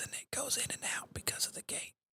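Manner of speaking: very quiet, breathy whispered aside. Testing a megaphone setup, showing off their whisper voice: whispering. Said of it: "here's my whisper voice".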